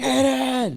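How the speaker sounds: high, loud yelling call.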